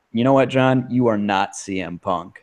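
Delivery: plain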